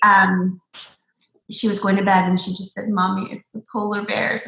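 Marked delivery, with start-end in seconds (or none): none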